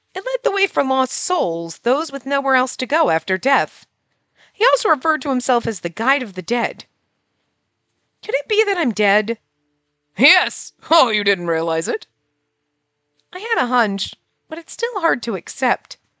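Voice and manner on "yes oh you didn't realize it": jovial, cheerful talking pumpkin voice. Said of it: "the pumpkin has a jovial voice now".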